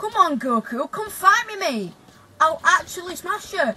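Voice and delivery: loud, high yell at the top of the lungs. Retelling yelling for Goku when your dad came to pick you up: retelling a top-of-voice yell. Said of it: "I'm yelling at the top of my voice".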